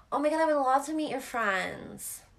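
put-on very high, girlish feminine voice from a man. Retelling a man's reply about meeting her friends: imitating a feminine male voice. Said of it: "the most feminine voice in a male".

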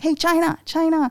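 put-on high yell. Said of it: "yelled out at me like".

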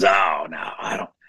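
raspy put-on voice. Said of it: "He had that raspy voice".

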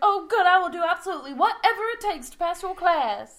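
play-acted thrilled, eager squeal, very high, loud. Retelling a scene, quote Blanche answering him, mock-excited Blanche. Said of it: "Blanche gets all excited".

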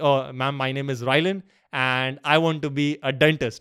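confident, very proud, slow delivery. Retelling answering a teacher in class: retelling a proud statement. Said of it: "very proudly".

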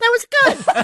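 put-on, adorable, cute-sounding voice. Retelling what his wife said at the end of an episode: imitating Jocelyn's adorable voice. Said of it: "his wife Jocelyn's adorable voice saying".

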